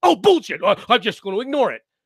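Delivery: dismissive mimicking tone. Mimicking how the other speaker dismissed a point: mocking imitation of the other speaker. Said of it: "what did you do with it?".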